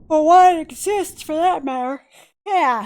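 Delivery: talking through a yawn. Gamer commenting while playing, yawning. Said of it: "I'm yawning".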